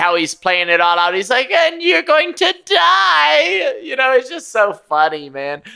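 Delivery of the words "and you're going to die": very high, slow villain gloat with die drawn out. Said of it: "It's very Doctor Evil".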